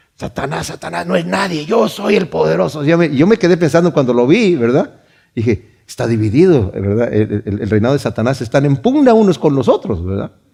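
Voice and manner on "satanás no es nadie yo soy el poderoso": very strange, soft, creaky demonic voice. Retelling how a manifested demon started to speak: weird demon voice. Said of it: "empezó a hablar con una voz así muy rara".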